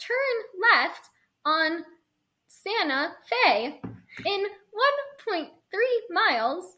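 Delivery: automated, robotic navigation-style voice. Teasing the other speaker for sounding like a robot, do the Google voice. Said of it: "Google voice".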